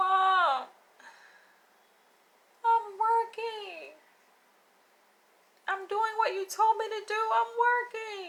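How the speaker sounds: mock, very high, tearful, crying and begging. Retelling a son begging his mother for mercy: imitating a crying plea for mercy. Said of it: "he's pleading for her mercy".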